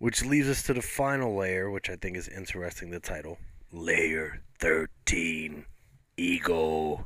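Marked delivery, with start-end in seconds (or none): 3.7-7.1 put-on mechanical, robotic announcer voice. Discussing a show, imitating the pseudo-robotic voice that introduces each episode. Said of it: "that's the sort of pseudo-robotic voice".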